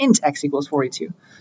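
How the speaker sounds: INT stressed, spoken with a falling tune.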